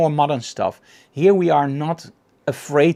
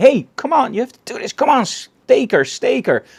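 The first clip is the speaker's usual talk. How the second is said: mock pushy coaching shout, pitched high; 9 semitones higher, 4 dB louder than usual. Retelling coaching models during a vampire shoot: imitating own shouting at models. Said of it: "started shouting at my models".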